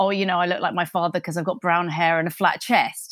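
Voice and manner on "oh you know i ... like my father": usual speaking voice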